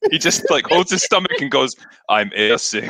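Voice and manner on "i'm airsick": flat voice with no inflection. Retelling a scene where a character claims airsickness: imitating Arnold's deadpan delivery. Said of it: "With no expression, no inflection in his voice".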